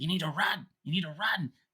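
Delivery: very high, piercing scream. Voicing a character warning an old friend to run: screaming. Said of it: "he's just screaming at this face".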